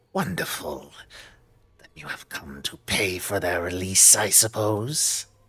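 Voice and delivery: hissing, sibilant creature voice, every s hissed. Game master voices the creature Cyrus answering the party, hissing Cyrus voice. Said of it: "in this sort of hissing, uh, um, kind of sibilant voice".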